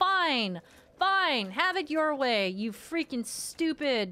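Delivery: sudden angry, mad outburst. Streamer reacting to an opponent appearing out of nowhere in a fight, mad. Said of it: "I'm mad".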